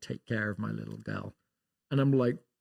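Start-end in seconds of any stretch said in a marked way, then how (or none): 0.0-1.3 imitated whisper, lower and quieter. Retelling a goodbye hug at the airport: imitating someone whispering. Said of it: "he just whispers in my ear".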